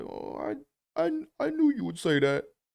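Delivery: very high, dejected, drooping, resigned cartoon sidekick voice. Acting out Cringer putting his head down after Adam calls for He-Man: dejected Cringer voice. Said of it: "Cringer just puts his head down".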